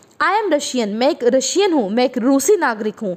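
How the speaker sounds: ordinary talk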